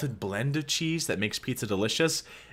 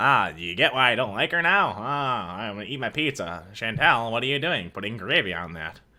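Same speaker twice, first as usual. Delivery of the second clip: Martian-like voice. Imitating Pete talking while watching a video: imitating Pete sounding like a Martian. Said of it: "He sounds like a Martian".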